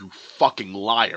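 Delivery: very loud, put-on enraged, furious outburst. Retelling the moment of hearing that Rain had died, retelling an angry outburst. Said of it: "I was mad".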